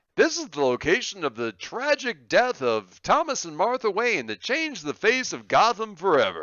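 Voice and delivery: grand, booming radio announcer delivery, swooping pitch. Speaker imitates a game character's voiceover at mission kiosks: radio announcer voice. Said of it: "in his radio announcer voice".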